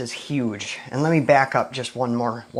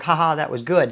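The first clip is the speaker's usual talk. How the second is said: ordinary talk, nothing marked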